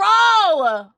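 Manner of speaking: very loud, high, stretched-out shout of "scroll". While looking a person up, the speaker yells at OBS: yelling. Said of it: "I'm yelling at O B S".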